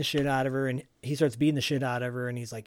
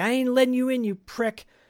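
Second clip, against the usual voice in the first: put-on scared voice, very high and raised; 10 semitones higher, 5 dB louder than usual. Retelling Ginger refusing to let Ramrod in, imitating scared Ginger. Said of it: "Ginger's scared and terrified".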